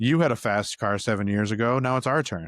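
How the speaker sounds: ordinary delivery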